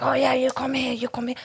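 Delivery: overeager, pushy, flirty man's voice. Imitating a man who is all over a woman: imitating an overeager man hitting on a woman. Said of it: "If a man is like all over, is like".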